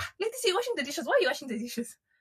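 high-pitched, fast, teasing voice.

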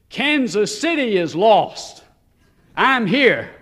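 big, resounding, booming, defensive delivery. Speaker retelling a man's defensive comeback, booming voice. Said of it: "He came back with a booming voice".

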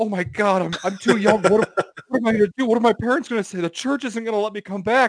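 high-pitched, loud, panicked full-on meltdown. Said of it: "had a full-on meltdown".

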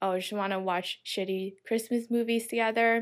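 ordinary delivery

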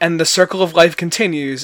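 ordinary talk

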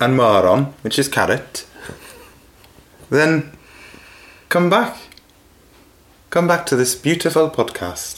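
bad, failed put-on Welsh accent. Ending the podcast for listeners as a made-up greengrocer, in a failed Welsh accent. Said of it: "I can't do a Welsh accent".

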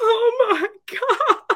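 very high, top-of-the-lungs shrieking scream. Retelling watching concert videos back: imitating own screaming. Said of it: "me screaming at the top of my lungs".

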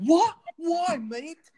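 very high, shrill, loud, panicked disbelief. Retelling a cast member's reaction to being disinvited: imitating someone freaking out. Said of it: "freaking out".

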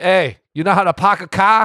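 put-on Boston accent voice. Riffing with the other speaker about sports fans and Boston; Boston accent. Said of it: "You like my Boston accent?".

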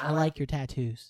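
flat, dead level monotone with no inflection. Imitating how she flirted about a tattoo, monotone delivery. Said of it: "it sounded so monotone".

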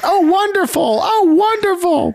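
very high, drawn-out hooting holler and cheer. Retelling a scene where an audience member screams out: hooting and hollering. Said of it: "She hoots and hollers and screams out".

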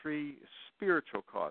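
spiritual stressed, drawn out slow and high.

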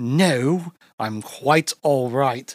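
put-on British accent, very drawn out and slow. Retelling a story, speaker voices a man's reply in a put-on british accent. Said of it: "I don't know why I'm giving him a British accent".

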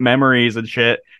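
ordinary talk, nothing marked

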